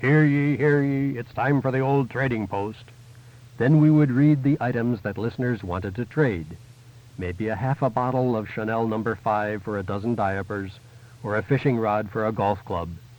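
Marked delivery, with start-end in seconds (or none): 0.0-2.8 town crier proclaiming, "ye" drawn out. Host opening the on-air trading post segment, in a town crier voice. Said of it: "in my best town crier voice".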